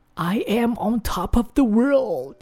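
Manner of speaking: joyful rising intonation.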